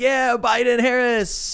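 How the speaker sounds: high, cheering whoop.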